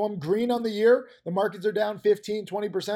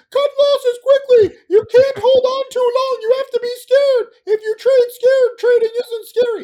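very loud, very high, shrill castrato choirboy voice; 12 dB louder than usual. A trader acts out how he talks on his trading DVD, in a castrated choir boy voice. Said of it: "I talk like a castrated choir boy".

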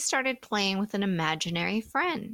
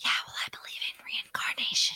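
hushed, breathy, barely voiced whisper. Quoting a clip of the other speaker: replaying someone's whisper. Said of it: "a clip of you whispering".

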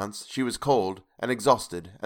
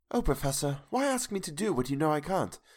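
gentle, deeply concerned sweetness, high and swooping; 6 semitones higher, 5 dB quieter than usual. Reading a woman's reply to the Professor as she opens her eyes, sweetly, with utmost concern. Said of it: "sweetly, and seemingly with the utmost concern".

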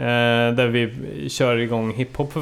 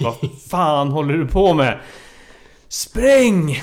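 mock loud hollering shout; 4 semitones higher, 5 dB louder than usual. Retelling a friend and his girlfriend yelling at him, retelling being yelled at. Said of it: "skrek på mig".

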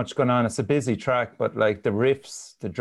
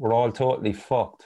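ordinary talk, nothing marked

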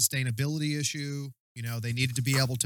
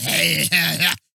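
put-on loud, mean, very drunk old man voice; 3 semitones higher, 7 dB louder than usual. Describing an actor playing a knight: imitating a mean drunk old man. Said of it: "looking like the oldest, just meanest, drunkest man, just going".

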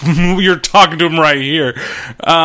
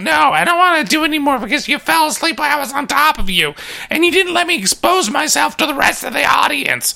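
very high, put-on female voice; 10 semitones higher than usual. Retelling what a woman said to her partner, in a put-on female voice. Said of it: "when I'm trying to talk like a female".

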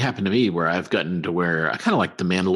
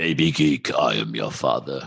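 low, rough, rasping villain voice; 5 semitones lower than usual. Doing the Darth Vader voice the other speaker just declined: Darth Vader voice. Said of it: "Give us your Darth Vader voice".

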